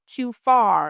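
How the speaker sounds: usual speaking voice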